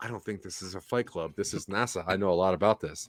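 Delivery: mock muttering under breath. Retelling own reply to what they said: retelling a mutter under breath. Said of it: "under my breath".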